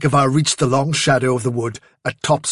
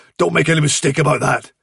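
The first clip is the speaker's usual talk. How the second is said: ordinary delivery, nothing marked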